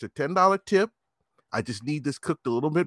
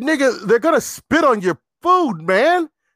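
harsh, loud dad voice, pitched up; 8 semitones higher, 6 dB louder than usual.

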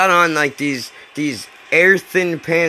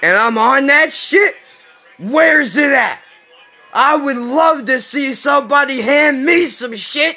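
put-on unhinged, high, wild screaming; 11 semitones higher, 4 dB louder than usual. Retelling how a man on a bench suddenly started yelling: imitating a man screaming. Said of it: "And screaming".

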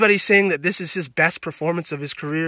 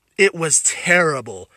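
ordinary talk, nothing marked

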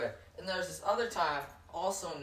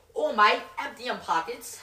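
very loud, high British accent drifting toward Australian; 8 semitones higher, 11 dB louder than usual. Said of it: "you sound like an Australian, not a British".

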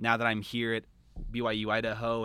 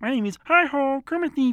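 high, loud, squeaky voice; 11 dB louder than usual. Performing an impression when asked for more impressions: Kermit the Frog impression. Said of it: "here I got this little friend of mine".

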